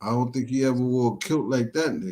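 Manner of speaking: usual speaking voice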